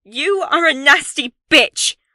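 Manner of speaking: very loud shouting. Reading a story aloud, the narrator confronting a friend: shouting. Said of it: "I think I'm shouting".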